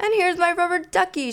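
delighted, excited shout at a very high pitch. Pulling a gift out of its wrapping, a character shouts. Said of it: "shouted Ernie, jumping up and down".

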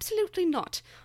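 put-on British accent in a very high-pitched voice. Imitating the book's author rejecting the directors: imitating a british voice. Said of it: "her beautiful British voice".

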